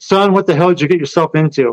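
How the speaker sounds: put-on worried, concerned tone. Recalling his dad's call about the Skinwalker book, the speaker imitates Dad's concerned voice. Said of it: "the only time he had concern in his voice".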